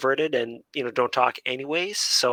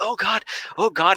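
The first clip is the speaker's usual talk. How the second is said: high, anxious panic; 8 semitones higher than usual. Retelling how game pressure makes the speaker anxious: retelling own anxious panic. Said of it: "it gives me huge anxiety".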